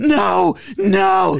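loud, high shout. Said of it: "And Joey fucking yells".

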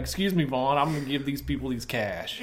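ordinary talk

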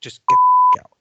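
mock scream. Retelling a bartender screaming at a man who yelled at a friend, retelling a scream. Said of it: "Just starts screaming".

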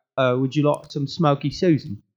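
put-on British accent. Joking about a strain name, saying it like a British guy voice. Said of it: "said by a, a British guy".

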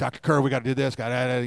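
mock wound-up eagerness. Retelling how one spoke to a professor: imitating own hyper past self.

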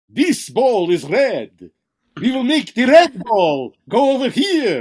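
loud, high, swooping vampire voice. Showing the act his brother suggested, do the patter in a Dracula voice. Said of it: "He thought I should use my Dracula voice".

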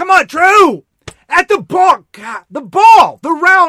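shrill, very high, loud cheering yell. A parent recalls standing there at a game, retelling a loud yell. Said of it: "but I'm literally standing there going".

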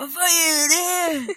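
high, slow, shocked outcry, half laughing.

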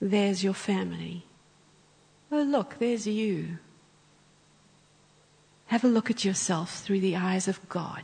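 put-on whisper. Retelling a guided imagination exercise with eyes closed: imitating someone whispering. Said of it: "he's whispering as he speaks".

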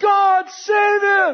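desperate, very high-pitched, slow, loud yelling. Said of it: "she's yelling".

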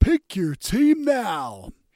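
big American voice. Telling how a phone app spoke up during an interval, the speaker imitates its big American voice. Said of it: "this big American voice said".

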